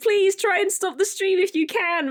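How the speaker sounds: mock urgent, very high-pitched yelling. A streamer recalls their hacked Twitch account and their mods: retelling yelling at mods. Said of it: "I was just like yelling at my mods like".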